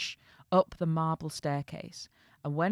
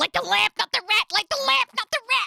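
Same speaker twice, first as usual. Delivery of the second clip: very high, very loud, rough, raspy, squawking puppet voice; 9 dB louder than usual. Offer a Muppet voice for a character's dialogue in your Muppets version, doing a Rizzo the Muppet voice. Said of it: "Or Rizzo".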